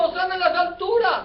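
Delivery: high, loud crowd-like shouting. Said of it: "Y la gente gritando".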